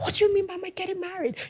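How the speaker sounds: high mock shout. Retelling how the man reacted when asked about marriage: imitating someone shouting. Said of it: "started shouting".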